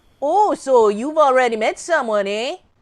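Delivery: put-on over-the-top Midwestern accent, laid on thick. Re-voicing the mother character's line in another accent: extreme Midwestern accent. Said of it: "Extreme Midwestern accent".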